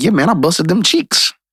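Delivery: put-on straight-faced, flat, matter-of-fact deadpan delivery. Quoting a man who said it with a straight face, retelling it deadpan. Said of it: "he says it with a straight face".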